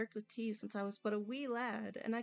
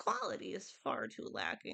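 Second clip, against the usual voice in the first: put-on elderly gentleman's voice; 10 semitones lower than usual. Trying out a character's line, unsure how to do it: old man voice. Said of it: "Am I supposed to do an old man voice?".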